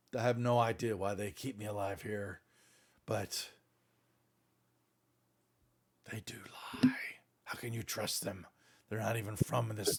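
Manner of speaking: barely audible, hushed creature voice. Voicing a mind flayer for the other players: mind flayer voice. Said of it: "I'm trying to sound like a damn mind flayer".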